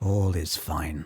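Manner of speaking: very hushed, low half-whisper, barely audible. A game master voicing a dragon's reply to a sent message, very hushed half-whisper. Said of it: "respond this time with just like a very hushed whisper".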